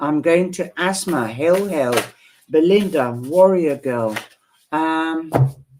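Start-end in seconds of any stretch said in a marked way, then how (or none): none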